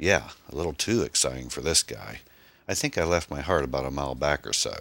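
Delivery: plain reading voice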